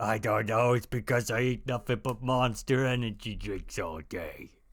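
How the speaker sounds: put-on fifty-nine-year-old man voice. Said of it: "Why do you sound like a fifty-nine-year-old man?".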